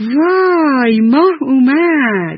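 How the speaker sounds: joyful, delighted, high-pitched voice. A yellow spotted snake sees the thin little moon, happy. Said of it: "با خوشحالی گفت".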